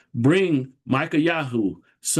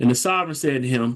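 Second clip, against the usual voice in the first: usual speaking voice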